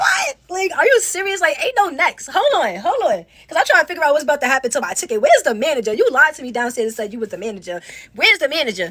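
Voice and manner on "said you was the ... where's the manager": normal talking voice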